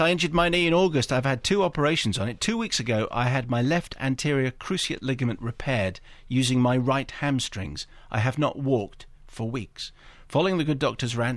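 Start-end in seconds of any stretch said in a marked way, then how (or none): none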